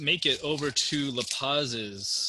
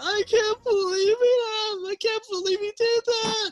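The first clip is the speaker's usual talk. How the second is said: crying halfling voice, much higher, louder, slower; 7 dB louder than usual. Voicing a little halfling amid the shattered wreckage, crying halfling. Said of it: "Just crying".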